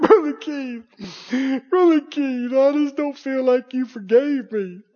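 mock weepy, tearful crying voice. Acting out a caller who phones back crying about forgiveness: imitating someone crying. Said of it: "you're crying".

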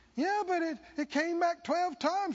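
high-pitched, whiny, complaining voice.

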